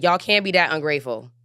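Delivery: firm, serious, a little sterner tone. Addressing the audience so they feel it, a little sterner. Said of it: "I'm saying that like with a little sterner voice".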